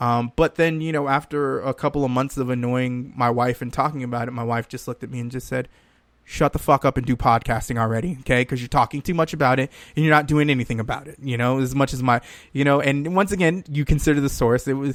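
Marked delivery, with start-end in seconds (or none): 6.2-11.2 put-on aggressive voice. Retelling what the wife said about podcasting: imitating the wife's aggressive tone. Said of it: "the way she said it was kind of aggressive".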